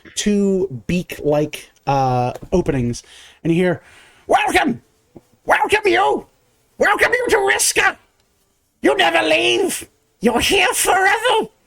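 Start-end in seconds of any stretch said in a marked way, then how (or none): 4.2-11.5 very high, shrill, screeching creature shriek. Narrator voicing a beaked creature welcoming visitors to Riska, screeching yell. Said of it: "You hear a screech yell out".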